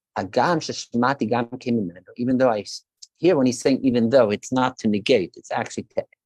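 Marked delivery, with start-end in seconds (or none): none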